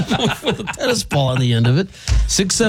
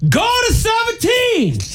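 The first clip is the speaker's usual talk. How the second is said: mock-screaming, much higher. Retelling how a man shouted at another guy, imitating him screaming. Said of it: "he's screaming at this guy".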